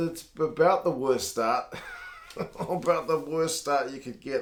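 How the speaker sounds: words broken up by laughing throughout. Commentator on a team's bad start, laughing while talking. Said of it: "I'm sorry to laugh".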